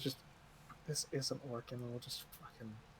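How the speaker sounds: fast, hushed, very quiet whisper. Player speaking as their character to the group, whispering. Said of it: "just kind of like whispers".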